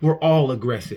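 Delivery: ordinary delivery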